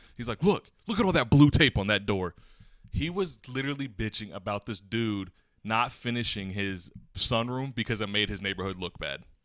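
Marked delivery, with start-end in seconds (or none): 0.4-2.4 loud, high-pitched, contemptuous tone. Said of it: "With contempt in his voice".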